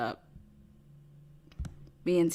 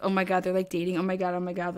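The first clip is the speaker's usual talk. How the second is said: ordinary delivery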